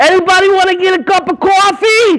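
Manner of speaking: put-on Jersey accent. Calling to the speaker's kids to get their attention: New Jersey accent. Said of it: "I grew up in Jersey".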